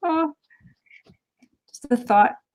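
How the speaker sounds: on the verge of tears. Reacting to hearing she found a good guy and bought a house: tearing up. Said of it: "tearing up right now".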